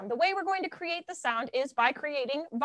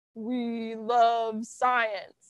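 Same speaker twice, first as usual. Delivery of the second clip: bottom-of-the-range voice, slow and loud; 4 semitones lower, 3 dB louder than usual. Leading listeners in a repeat-after-me phrase, in the most low-pitched voice. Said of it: "in our most low-pitched voice".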